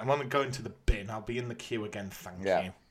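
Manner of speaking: muttering under breath. Retelling what he said while stepping out of a queue, muttered under breath. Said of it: "I just sort of muttered under my breath".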